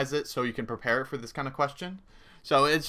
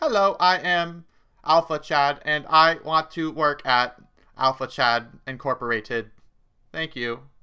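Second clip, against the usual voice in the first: loud robot voice, talking like a machine; 6 dB louder than usual. Giving interview advice, demonstrating a candidate who sounds like a robot: robot voice. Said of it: "sounds like a robot".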